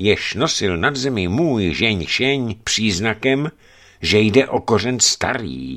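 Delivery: ordinary delivery, nothing marked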